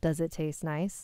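ordinary delivery, nothing marked

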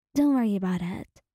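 ordinary delivery

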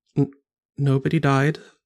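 muttered, stumbling over the first word. Voicing Valerie repeating a line: muttering under her breath. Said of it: "Valerie says again under her breath".

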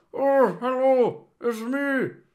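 very high, loud ventriloquist dummy voice. A streamer doing ventriloquism greets the viewers as Eddie, in ventriloquist voice. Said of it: "Sorry, I'm doing ventriloquism".

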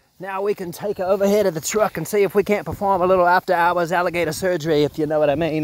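put-on Australian accent. Speaker about to work on an alligator in the truck: best Aussie voice. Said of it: "in my best Aussie voice".

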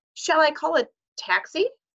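startled, very high cry. Mrs. hunt asks the swaying headmaster, mr. johnson, a question: shocked tone. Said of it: "said Mrs. Hunt in a shocked tone".

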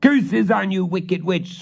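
very high, furious screeching scream. A prior, knocked down by a ghost, curses it from the floor; screaming. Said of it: "screamed the prior".

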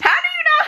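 high, loud, laughing voice full of shock and disbelief.

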